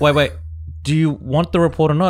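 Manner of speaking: usual speaking voice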